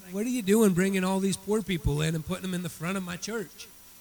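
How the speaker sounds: normal talking voice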